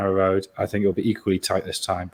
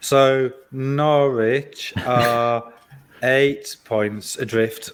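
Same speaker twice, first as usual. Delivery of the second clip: very slow, stretched-out, deliberate delivery. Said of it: "I'll speak slowly and try and stretch it to a minute".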